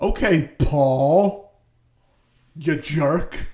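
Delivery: mock-accusatory, put-on accusing tone. Retelling a story character's thoughts toward another character, in a mock-accusatory tone. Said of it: "in this very accusatory tone in his head".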